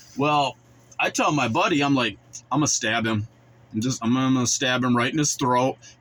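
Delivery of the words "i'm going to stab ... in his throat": ordinary delivery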